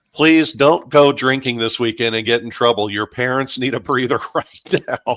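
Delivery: mock imploring, earnest, begging tone. Retelling a teacher's words to the class: imitating a teacher pleading. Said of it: "pleading with the class saying".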